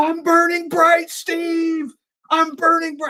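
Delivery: very high, very slow, theatrical, every word stretched. Asked for an impression, the speaker gives a William Shatner impression. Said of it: "I'll do one".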